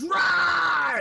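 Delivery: put-on little baby voice, high and loud roar.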